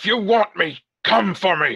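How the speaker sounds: loud, high, shouted yell. Voicing a character readying an axe against hidden attackers: yelling a challenge. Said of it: "ready my axe and yell out".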